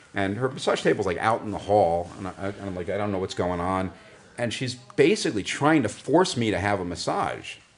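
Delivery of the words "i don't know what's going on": usual speaking voice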